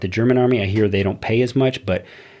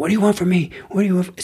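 put-on scream, higher pitched; 10 semitones higher than usual. Retelling how a recruit screamed at the drill sergeants: imitating someone screaming. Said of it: "started screaming at him".

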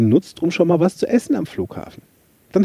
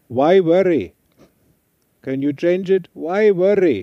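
put-on high-pitched Indian-accented English. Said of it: "mit seinem schönen indischen Akzent".

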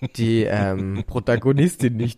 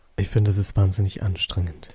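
very deep voice, much lower pitch; 3 semitones lower than usual. Asked how low they can speak, answering in a very deep voice. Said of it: "wenn ich so tief spreche".

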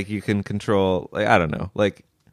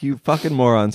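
plain

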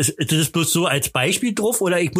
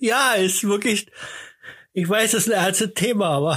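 talking through giggles, laughing through the words; 4 semitones higher than usual. Admitting a charity story is a serious topic, laughing while speaking. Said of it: "warum lachst du?".

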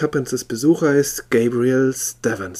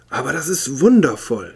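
astonished, amazed outburst of wonder. The visitor responds to the man's deductions about him, exclaiming in amazement. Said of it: "rief er aus".

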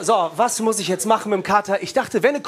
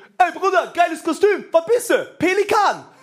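put-on drunk man shouting, high-pitched; 8 semitones higher than usual. Retelling carnival in Cologne in a flamingo costume, imitating a drunk guy shouting. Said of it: "jeder besoffene zweite Typ schreit mich an mit Schielblick".

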